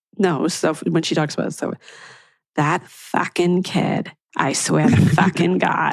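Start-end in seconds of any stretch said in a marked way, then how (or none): 2.5-5.9 put-on Boston accent, drawn out. Retelling how a Boston teacher talks about a student: imitating Fran's Boston accent. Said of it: "my mother has the same accent".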